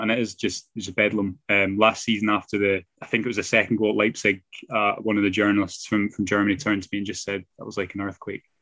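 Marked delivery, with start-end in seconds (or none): 7.6-8.4 put-on deadpan, quieter and faster. Retelling what a German journalist said after a goal at Leipzig: completely deadpan. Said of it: "Completely deadpan".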